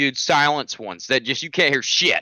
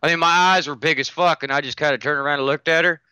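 ordinary delivery

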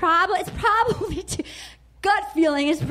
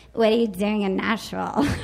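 very low, creaky, fry-heavy voice; 8 semitones lower than usual. Retelling what the girls at a romper area asked, imitating their vocal fry. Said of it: "the girls there had a lot of vocal fry".

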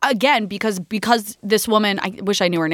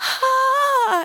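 very high, stifled pained gasp. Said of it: "is still like".

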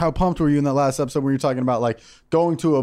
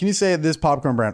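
plain

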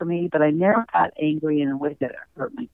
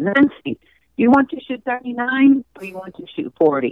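put-on sweet, cute little Spanish accent; 8 semitones higher, 6 dB louder than usual. Retell what your dad said when he walked up to you, in his cute little spanish voice. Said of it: "in his cute little Spanish voice".

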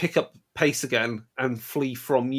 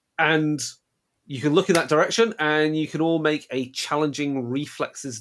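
ordinary talk, nothing marked

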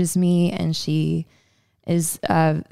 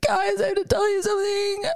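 mock, very high, sob-choked voice. Retelling the moment of telling two friends something: reenacting sobbing. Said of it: "And I'm like sobbing my eyes out".

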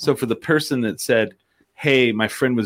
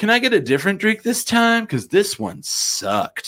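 very high, grating, obnoxious California bro voice; 11 semitones higher than usual. Retelling what a guy at the bar asked the bartender, as an obnoxious California guy. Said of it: "California obnoxious".

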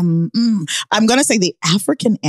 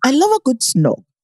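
island-English accent, slightly Jamaican; 3 semitones higher than usual. Repeating a line after another speaker: english accent sounding jamaican. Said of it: "you sound a little Jamaican with it".

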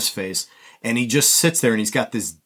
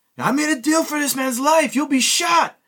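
much higher mock German officer voice. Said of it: "he goes".

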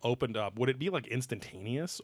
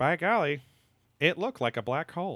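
dry tone, slightly raised pitch; 5 semitones higher, 3 dB louder than usual. Quoting a scientist describing an experiment: dry Michio Kaku voice. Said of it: "a dry voice like this".

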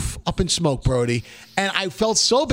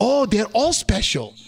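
put-on Southern US accent; 2 semitones higher than usual. Retelling a woman's answer to his question, in a put-on accent. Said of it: "What's that accent you're doing?".

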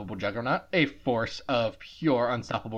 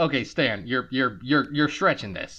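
plain

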